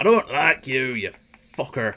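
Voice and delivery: put-on accidental, slipping Irish accent. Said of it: "he's gone Irish for some reason".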